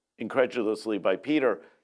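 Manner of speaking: usual speaking voice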